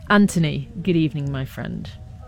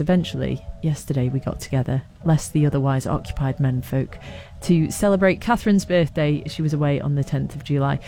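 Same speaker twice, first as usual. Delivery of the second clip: usual speaking voice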